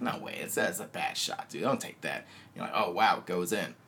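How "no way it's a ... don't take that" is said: quiet, doubting murmur of disbelief, almost a whisper. Retelling early reactions to a player's shots: acting out speaking quietly. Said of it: "you start off like really quietly".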